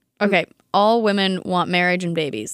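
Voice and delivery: ordinary talk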